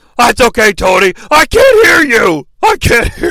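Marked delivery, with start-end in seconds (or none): 1.3-3.3 very high, slow, drawn-out put-on voice. Answering a question addressed to him in the Brain voice. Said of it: "That's the only thing I can do in the Brain voice".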